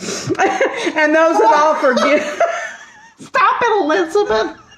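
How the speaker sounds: words breaking into giggles. Trying to keep going while others joke around, laughing while talking. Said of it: "I can't stop laughing".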